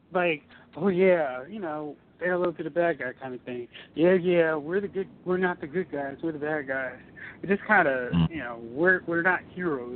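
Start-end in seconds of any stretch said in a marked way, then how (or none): 3.9-7.0 imitated sarcastic tone. Discussing a movie, acting out its characters' line, retelling a sarcastic line. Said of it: "they were being sarcastic".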